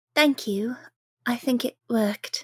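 character voice with a forced smile. Narrating a game scene after a spell is cast, Blossom with a forced smile. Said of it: "she forces a smile and goes".

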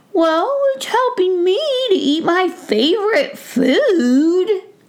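very high squeaky mouse voice, "food" stretched out. Brisbane, told by the gnome he is stealing peas, answers in a squeaky mouse voice. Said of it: "He recognized that it was [name] the mouse, ... [name] heard a squeaky voice right outside of the coop door".

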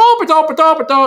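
put-on sing-song movie-style Irish accent. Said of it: "the musicality of Irish Americans".

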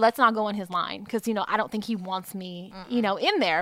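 plain

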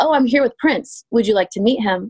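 ordinary talk, nothing marked

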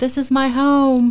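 loud, high shout at full voice. Retelling a granddaughter running up the driveway: imitating someone shouting.

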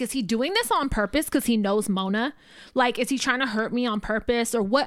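ordinary talk, nothing marked

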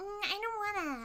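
very high-pitched grating voice. Retelling a scene, quoting Lily opening an envelope; annoying Lily voice. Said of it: "Sorry for the annoying voice".

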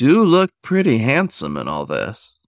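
sly, sing-song, teasing tone. Reading a story aloud, a bear teasing the wolf: sly voice. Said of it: "Yona said in his best sly voice".

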